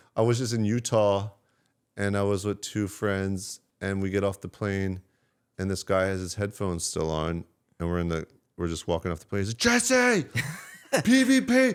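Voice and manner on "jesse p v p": mock excited scream, very high, very slow. Recalling a guy with headphones on calling out to him off the plane, retelling a guy screaming. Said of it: "he's screaming".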